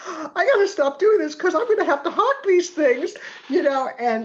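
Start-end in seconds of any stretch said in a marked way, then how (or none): 0.1-3.1 mock very high, loud crying through tears. Retelling sobbing into mother's evening gowns: retelling own sobbing words. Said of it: "And I'm sobbing, going".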